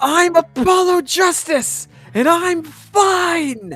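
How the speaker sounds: shouting loudly. Showing a stress-relieving voice workout before a trial, the speaker goes first: loud shout. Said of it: "shouting, "I'm fine!" in a loud voice".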